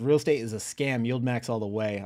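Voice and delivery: ordinary talk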